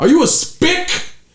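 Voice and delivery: very high-pitched, loud yell. Comedian retelling a man at an open mic turning to him, retelling a loud yell. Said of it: "Like loud as fuck".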